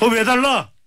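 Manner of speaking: angry complaint.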